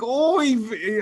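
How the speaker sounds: put-on old grandma voice, exclamation, oy vey. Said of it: "if I could make his mouth do it, he'd be like".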